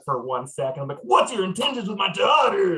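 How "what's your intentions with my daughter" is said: loud shouting, higher pitch. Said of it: "I start just yelling loudly".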